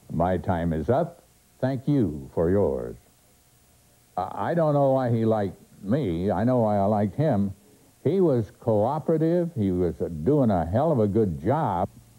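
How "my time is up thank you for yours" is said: put-on announcer voice with vibrato, lower. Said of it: "that's a great voice".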